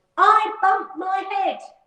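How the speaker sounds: very high, small, grumpy and cross voice. Narrator reads the little rabbit stuck in the well answering Percy, in a cross little voice. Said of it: "A rather cross little voice answered".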